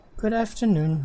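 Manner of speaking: tired, weary put-on character voice. Voicing Miss Novery greeting the group: tired Miss Novery voice. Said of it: "You sound way more tired than usual".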